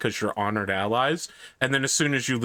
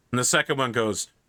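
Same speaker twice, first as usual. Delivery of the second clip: ordinary talk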